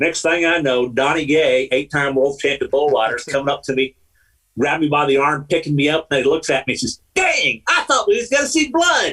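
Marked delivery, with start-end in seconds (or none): 7.1-9.1 very high-pitched voice. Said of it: "I can so hear that voice".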